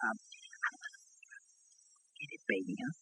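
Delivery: hushed, soft, whispered aside. Excusing himself to whisper a request to the baby: whispering. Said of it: "whisper to Baby Dumpling".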